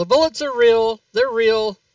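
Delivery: high, loud yelling in a character voice. Rounding a corner in the game and yelling to others: in-character yell. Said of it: "I'm gonna yell".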